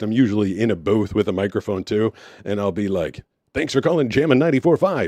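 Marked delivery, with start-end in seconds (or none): 3.5-5.1 high, put-on on-air radio DJ announcer voice. Answering a potential spam call in a booth, put-on radio dj voice. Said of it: "I always answer like in my radio voice".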